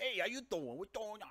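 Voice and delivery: put-on New York accent, very high pitch. Showing the different tones of a New York accent, doing a New York accent. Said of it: "different tones of a New York accent".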